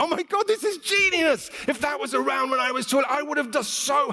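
high, amazed, awestruck voice.

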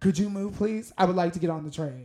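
put-on snotty, bratty voice. Reading a story aloud, retelling a stroller mom's demand: imitating a bitchy request. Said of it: "In the most bitchy way possible".

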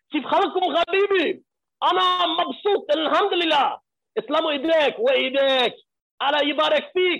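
high, full-throated, top-of-the-lungs shout in Arabic. Retelling jumping out of a Jeep on arrival and greeting in Arabic, retelling a scream. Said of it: "screamed at the top of my lungs".

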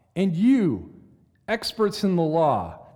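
loud "and you", pause before "experts". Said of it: "notice the dramatic pause".

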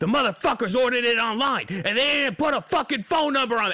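very high, unhinged, furious rant. Retelling what a guy said while the speaker tried to help him: imitating an angry rant. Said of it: "he just lost his fucking mind".

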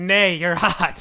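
loud, neigh-like horse voice. Speaker narrating a scene voices the horse, horse voice. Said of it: "The horse is like".

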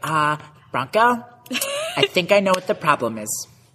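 put-on animated, high, sing-song girly voice. Retelling a pole vault practice, imitating Gabby's voice. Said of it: "my typical, uh, girl impression".

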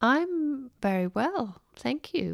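unsure, hesitant, slow and high. Asked how she is by the other host, a speaker answers, hesitant. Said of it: "You sounded a little hesitant".

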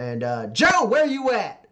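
loud, high-pitched hollering shout. Retelling how a man called out for Joe, retelling a loud shout. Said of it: "He kind of shouts loudly at your ears".

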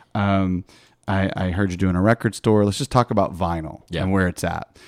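ordinary delivery

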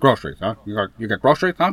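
low, muttered movie-gangster voice. Echoing another speaker's story line as Al Pacino in Scarface. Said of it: "Al Pacino and Scarface impersonation".

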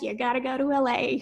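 put-on American accent. Retelling others' advice about learning the craft of acting, in an American accent. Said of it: "in their American accents".

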